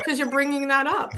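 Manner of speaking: crying while talking. Answering another speaker about an old article being raised, crying while talking. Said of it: "Why are you crying?".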